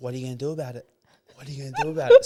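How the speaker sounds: roaring, loud, rising, aggressive, confrontational yell. Retelling how a man confronted him on the street: imitating someone screaming. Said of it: "screaming, like, roaring in my face".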